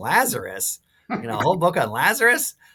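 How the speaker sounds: put-on, swooping Philadelphia accent. Recalling mom's question about the Lazarus book, imitating mom's Philadelphia accent. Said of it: "in her wonderful Philadelphia accent".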